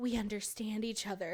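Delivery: brooding delivery. Retelling a character's reply from a book: imitating a broody line. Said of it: "a classic broody line".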